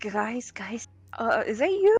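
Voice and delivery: startled, hesitant, nervous voice with pitch climbing. In the game, an invisible ally sneaks up behind Kara: Kara, jump-scared. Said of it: "Kara is fucking jump scared and goes".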